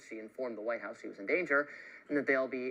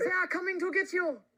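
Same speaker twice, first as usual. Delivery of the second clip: very high-pitched put-on French accent; 4 dB louder than usual. Mid-story, the speaker acts out a line in a French accent. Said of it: "That's actually a pretty good accent".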